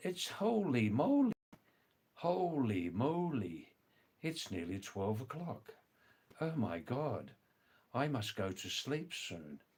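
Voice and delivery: posh British accent, "moly" drawn out. Showing the viewers another type of English accent: upper-class British accent. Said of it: "another type of English accent. More from the, like, the upper class in Britain".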